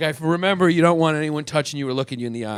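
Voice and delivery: ordinary talk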